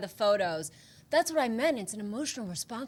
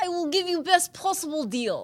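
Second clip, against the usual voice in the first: Russian accent, slightly higher pitch; 7 semitones higher than usual. Offering the listener a deal on speakers, half Christopher Walken, half Russian. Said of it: "half some Russian".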